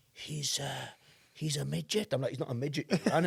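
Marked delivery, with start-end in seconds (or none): 0.2-2.2 hushed, half-whispered aside. Retelling what a mate said to the speaker in a pub, retelling a half-whisper. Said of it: "he sort of whispers".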